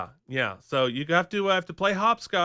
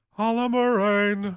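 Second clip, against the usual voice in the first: mock weird sing-song delivery, higher; 3 semitones higher than usual. Retelling how an actor said a line: imitating a weird sing-song voice. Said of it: "in this weird, like, sing-song voice".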